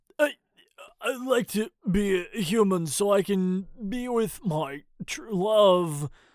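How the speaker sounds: stammering slightly. Reading a funny story, Paul asks to become human: stammering a bit. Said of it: "stammering a bit".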